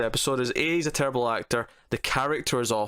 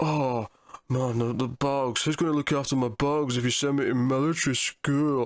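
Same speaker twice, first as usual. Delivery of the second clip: awful, cartoonish, caricatured teenager voice. Retelling how a show character argues his case, caricature of a teenager's voice. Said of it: "caricature of what a teenager's supposed to sound like".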